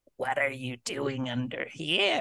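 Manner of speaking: eerie, creepy, hushed stage whisper. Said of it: "I hear this whisper of Noah Patton in his creepy ass voice".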